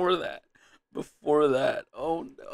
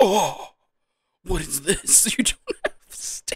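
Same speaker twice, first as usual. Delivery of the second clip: put-on anime-style surprised voice; 4 dB louder than usual. Retelling someone's reaction, doing a mock-surprised voice in Yu-Gi-Oh style. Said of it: "the surprise look that he would have based on like a Yu-Gi-Oh show".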